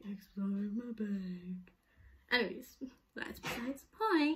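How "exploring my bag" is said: spooky, eerie, creepy put-on voice. Repeating an earlier intro line: imitating a creepy voice. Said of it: "I said that, like, really creepy".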